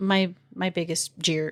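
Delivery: plain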